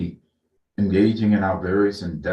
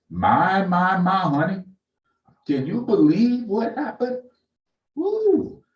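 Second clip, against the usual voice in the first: put-on old people voice, much higher, slower; 11 semitones higher than usual. Speaker imagines older people reacting to a Supreme Court nomination, imitating old people talking. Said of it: "I can hear those old people just going".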